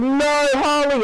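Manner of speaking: high, slow, angry yell. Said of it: "the Joker's, like, mad".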